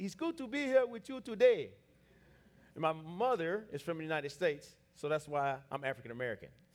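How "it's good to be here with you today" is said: put-on Nigerian accent, pitched up. Introducing yourself with a joke about how your father from Nigeria talks, imitating his Nigerian accent. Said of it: "and so he talks like this".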